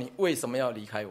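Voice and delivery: ordinary talk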